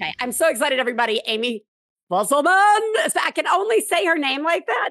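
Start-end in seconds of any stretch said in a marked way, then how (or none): 1.3-2.4 put-on angry principal tone. Podcast host introduces guest Amy Fusselman by name: mock-angry principal voice. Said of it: "Like I'm a principal and I'm angry".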